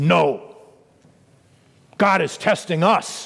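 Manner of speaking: rough, very gruff, slow man's voice. Retelling Richard's answer to his brother's question: imitating his very gruff voice. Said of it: "in his very gruff voice".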